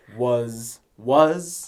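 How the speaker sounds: emphasizing the word 'was'. Redoing a line for the other speaker, stressing 'was' as they wanted. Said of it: "That's the was you wanted".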